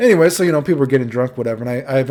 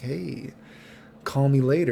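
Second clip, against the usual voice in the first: imitated whisper under the breath, quieter; 5 dB quieter than usual. Retelling what a watching dude said to him: imitating a whisper under breath. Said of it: "whispers under his breath".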